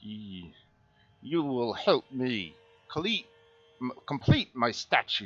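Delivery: gurgling, throaty, bubbly fish-creature voice. Game narrator voicing a character after his spell, in a throaty, bubbly, fishy voice. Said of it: "in a throaty, bubbly, fishy voice".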